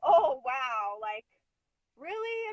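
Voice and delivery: mock, very slow, stunned, hurt, upset disbelief. Retelling her own reaction at a conference, retelling her own upset reaction. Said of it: "I just got even more upset 'cause I was like".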